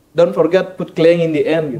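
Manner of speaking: ordinary talk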